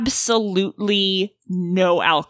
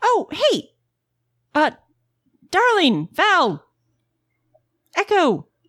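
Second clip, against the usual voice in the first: shouted loudly at a higher pitch; 10 semitones higher than usual. Game master voicing Hedwig hailing the players from her parking lot: shouting. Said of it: "you hear a shout from Hedwig's parking lot".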